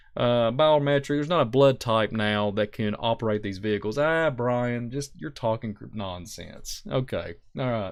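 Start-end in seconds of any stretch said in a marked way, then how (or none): 4.0-6.8 mocking, dry, sarcastic, dismissive tone. Mimicking someone brushing off questions: mock sarcastic dismissal. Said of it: "I'm being a little sar-, uh, sarcastic there".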